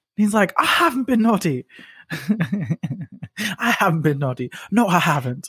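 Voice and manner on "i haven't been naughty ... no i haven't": mad put-on Cockney kid accent, high and slow. Retelling a video of a kid answering his dad, in a Cockney accent. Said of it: "got like a mad Cockney accent".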